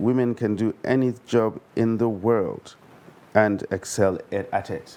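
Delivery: normal talking voice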